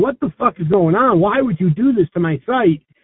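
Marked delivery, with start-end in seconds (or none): none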